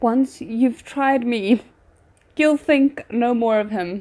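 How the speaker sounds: words breaking into laughter while speaking. Reading a line aloud and finding it absurd: laughing while reading. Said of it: "I'm laughing 'cause this is absurd".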